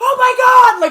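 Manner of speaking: very high, loud laughing yell.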